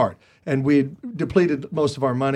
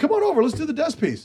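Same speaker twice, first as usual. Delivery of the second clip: high, upbeat, friendly, encouraging put-on voice. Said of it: "He goes".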